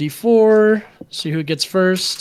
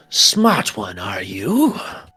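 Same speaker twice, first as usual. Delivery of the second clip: deep, very low, slow, drawn-out creature snarl; 9 semitones lower than usual. Voicing a creature that snarls at a player who resisted it: snarling creature voice. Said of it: "snarls at you".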